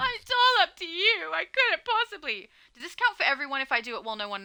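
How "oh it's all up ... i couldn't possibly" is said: feeble, high, weak, pathetic whining. Imitating how a woman sounds when she does that: imitating someone pathetic, weak. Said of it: "She sounds pathetic when she does that".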